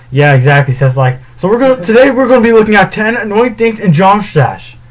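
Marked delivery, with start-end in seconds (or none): 1.3-4.7 mocking fast mumbled speech, much higher pitch. Imitating how he rushes the game's name: fast mumbled speech. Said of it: "he just says it so fast that he doesn't really pronounce his words".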